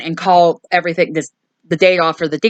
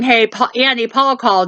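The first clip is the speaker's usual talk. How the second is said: mild calling out, pitched up; 5 semitones higher than usual. Retelling a movie scene where a character calls out to another: imitating someone yelling. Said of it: "is yelling".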